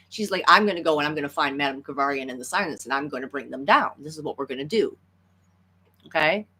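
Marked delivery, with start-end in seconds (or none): none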